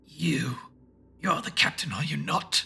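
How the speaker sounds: growling, throaty tones from the throat. Narrator reads an alien enemy standing over the captive narrator, throaty and growling. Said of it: "It was one of them. They were wearing ceremonial armor of some sort. I'd never seen anything like the silver-lined breastplate that took the majority of it all. This ferrule fashioned itself like a ki".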